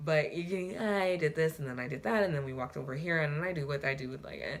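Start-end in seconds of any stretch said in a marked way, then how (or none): none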